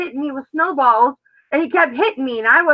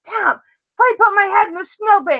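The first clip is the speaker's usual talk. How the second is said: mock fuming complaint, high-pitched; 6 semitones higher than usual. Retelling complaining to her husband tom that clay put her head in snow, retelling an angry complaint. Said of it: "I was so mad".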